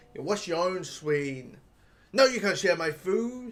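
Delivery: extremely rude, dismissive tone. Retelling a rude passenger refusing to share food: imitating a rude passenger. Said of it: "being the rudest person in the world".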